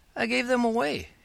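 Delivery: meek little voice, very high pitch. Narrator voicing Frank answering his father about his presents, in a small voice. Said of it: "he answered in a small voice".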